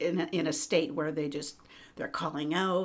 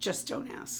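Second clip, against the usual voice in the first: acted deadpan, quieter and slower. Recalling asking someone across the room what was happening, retelling a deadpan reply. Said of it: "just very deadpan".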